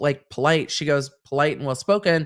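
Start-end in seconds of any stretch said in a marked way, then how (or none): none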